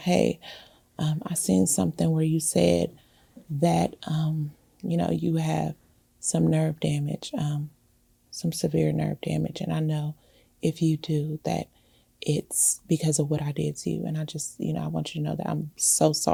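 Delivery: soft half-whisper all through, barely there. Retelling what Sabrina said on the phone, imitating someone half-whispering. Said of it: "she was, like, whispering".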